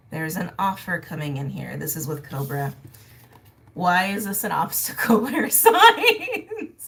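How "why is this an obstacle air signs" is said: very slow, very drawn out, swooping words through laughter. Reading tarot cards for viewers, laughing while talking. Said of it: "that's why I'm laughing".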